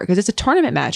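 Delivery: ordinary delivery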